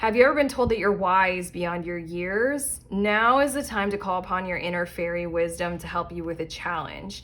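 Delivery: ordinary delivery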